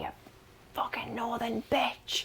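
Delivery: furious, angry whisper.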